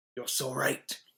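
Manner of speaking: put-on whispery character voice. Showing how to do the voice, the speaker tries a line: whispered Baelish impression. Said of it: "you got to whisper".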